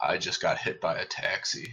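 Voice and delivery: put-on offhand, unbothered, quiet, breathy near-whisper. Retelling a video and quoting someone's reaction, mock-nonchalant quote. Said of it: "very nonchalantly says".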